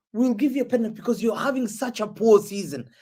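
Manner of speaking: plain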